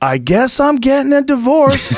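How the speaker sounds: high, loud, slow yell. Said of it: "he yells out".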